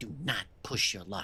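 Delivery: soft, goblin-like hiss under the breath. Voicing the goblin answering a cleric, Kraid hissing under his breath. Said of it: "then he hisses at you under his breath".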